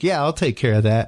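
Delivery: sarcastic, offhand, mocking tone. Retelling a reply to the wife: imitating own sarcastic tone. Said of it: "trying to lose the sarcasm from my voice".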